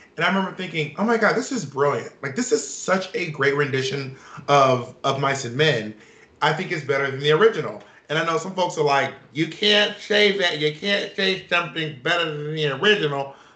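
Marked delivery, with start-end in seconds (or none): 9.3-13.3 affected, mannered put-on accent. Speaker imitates folks who disagree with his opinion, in an affected put-on accent. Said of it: "what's that accent or that affectation?".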